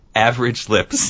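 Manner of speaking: normal talking voice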